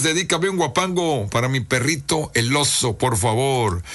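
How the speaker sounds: ordinary talk, nothing marked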